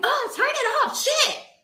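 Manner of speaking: very high, shrill scream at full volume. The speaker imitates a woman who unexpectedly yelled at them: imitating a full-volume yell. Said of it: "yelled at me like to the top of".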